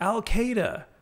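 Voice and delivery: high, mild mock yell. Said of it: "she yells".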